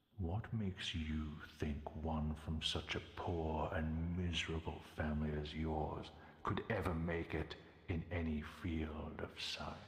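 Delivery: taunting, dark, swirling demon voice. As a demon taunting a small archaeologist, in a swirling voice of darkness. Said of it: "taunts him with a swirling voice of darkness".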